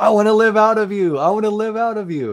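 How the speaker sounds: very high, full-throated, all-out yell. Retelling own words shouted in a vision: imitating own yell at top of lungs. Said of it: "three times at the top of my lungs".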